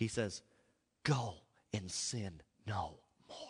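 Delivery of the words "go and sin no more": low, gentle, caring, tender and loving voice. Preaching, quoting Jesus's words, imitating Jesus's loving, tender voice. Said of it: "in the most loving, tender, caring voice that Jesus has".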